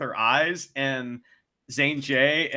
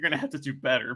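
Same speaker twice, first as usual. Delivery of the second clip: mock gleeful, delighted gloating, quieter; 4 dB quieter than usual. Retelling how a referee tells a young wrestler off: imitating delighted gloating. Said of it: "He's so happy that he gets to tell".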